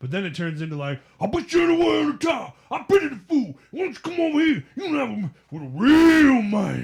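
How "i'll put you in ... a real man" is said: loud, shrill, big, cartoonish taunting voice. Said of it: "the cartoonishness of Mister T".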